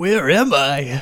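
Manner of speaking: California surfer-dude voice. A player's character wakes in an infirmary bed, in an accidental surfer-dude voice. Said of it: "He's not a surfer".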